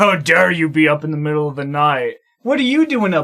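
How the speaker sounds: mock, harsh scolding tone. Retelling a movie dad snapping at his son at night: imitating a jerk dad scolding. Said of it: "He's like a total jerk to his own son".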